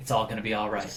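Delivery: soft, low mutter under the breath. Answering a woman who just muttered at them, muttering back. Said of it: "I just mutter back".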